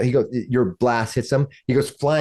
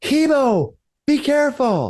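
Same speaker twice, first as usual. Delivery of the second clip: very high-pitched, swooping yell. Narrating the scene, voice Sister Gabrielle yelling a warning to Hemo from a room. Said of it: "you hear a woman's voice of Sister Gabrielle yell out".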